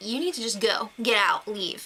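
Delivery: ordinary delivery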